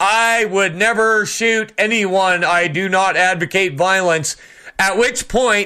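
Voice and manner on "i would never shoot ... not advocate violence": usual speaking voice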